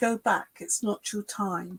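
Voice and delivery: ordinary talk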